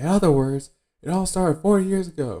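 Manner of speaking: very high, shrill, loud shouted outburst. Retelling a scene from a show, imitating Boodle yelling. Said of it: "Boodle kinda yells".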